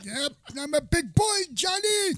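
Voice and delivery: very high, slow, drawn-out character voice. Joking about a movie, answered by another speaker: Al Pacino voice. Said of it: "Why do you guys sound like Al Pacino?".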